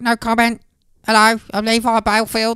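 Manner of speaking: put-on squeaky voice. Imitating a man in police interviews: imitating a squeaky voice. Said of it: "he sounds like Joe Piscopo".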